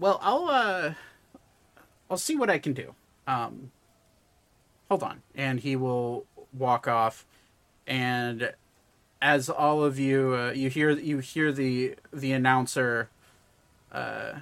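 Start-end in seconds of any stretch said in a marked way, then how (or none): 0.0-5.2 fully voiced, animated, swooping goblin voice. Voicing a goblin man replying to the players: goblin man voice. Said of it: "the goblin man looks at you".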